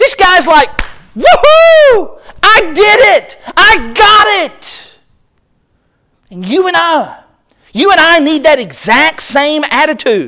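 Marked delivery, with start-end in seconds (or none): 1.2-5.0 acted ecstatic whooping, high, swooping, very slow. Acting out the parable's man after he buys the field: imitating ecstatic joy. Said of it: "this man did this in his joy".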